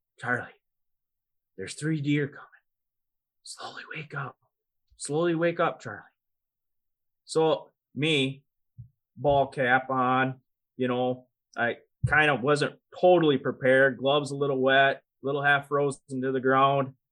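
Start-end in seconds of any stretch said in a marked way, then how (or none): 0.2-6.0 soft, hushed stage whisper. Retelling how grandpa woke a sleeping kid during a hunt: imitating grandpa whispering. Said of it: "and he whispers".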